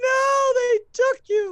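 distraught screaming. Voicing a distraught woman held up by others: distraught screaming. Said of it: "she's just screaming out".

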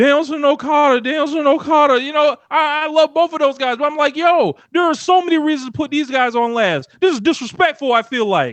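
worked-up, heated, loud, excited, rushed talk. Reacting to two guys being put on last: getting loud and excited. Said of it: "And I'm getting loud".

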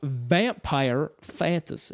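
put-on southern American drawl. Announcing the next genre in their ranking, in a southern drawl. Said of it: "You're trying to get your southern drawl".

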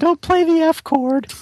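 put-on pitch way up, clumsy, poorly done girly voice. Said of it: "that was a bad girl impression".

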